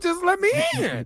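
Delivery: voice cracking and breaking way up high. Pleading to be let back into the house: voice cracking. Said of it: "your voice already cracking".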